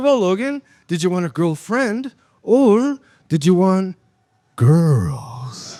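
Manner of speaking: slow, creepy, lingering delivery. Retelling a question put as an uncle about girls: imitating own creepy delivery. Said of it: "Why'd you say it so creepy?".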